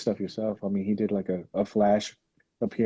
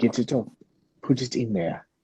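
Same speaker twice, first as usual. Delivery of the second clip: horrible, bad, fake put-on English accent; 2 semitones higher than usual. Imagining some guy setting up the box: horrible English accent. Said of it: "That's a horrible English accent".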